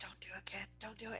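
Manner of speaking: very quiet, barely-there whisper. Warning the kid in character during the chart lesson: whispering. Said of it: "I'm gonna whisper a little bit".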